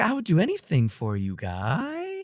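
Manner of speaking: upward lilt, rising inflection at end on "guy". Imitating a man's habitual up inflection, rising inflection on 'guy'. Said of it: "he always has that up inflection. He's like".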